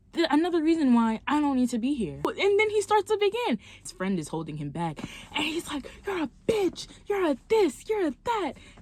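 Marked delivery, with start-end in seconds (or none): 6.1-8.6 put-on angry yelling, pitched up. Retelling the date's insults while his friend holds him back: imitating someone yelling insults. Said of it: "he's yelling".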